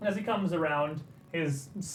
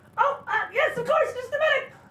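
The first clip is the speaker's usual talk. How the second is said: tiny squeaky goblin voice, very high and loud; 8 dB louder than usual. Narrating a scene, a goblin behind the bar answers a call in a squeaky, tiny voice. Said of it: "hear a squeaky, tiny voice call out".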